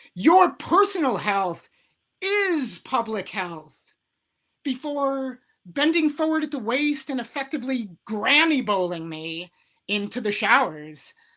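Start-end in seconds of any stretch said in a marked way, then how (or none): 0.2-4.0 roaring, booming bellow. Recounting what a man bellowed at him; retelling a bellow. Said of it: "And he bellowed".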